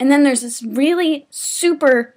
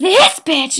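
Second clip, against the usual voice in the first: loud mock yelling, shouted; 3 semitones higher, 3 dB louder than usual. Retelling how an ex-boyfriend pointed at her in the hallway: imitating Sam McLean yelling. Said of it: "You're yelling".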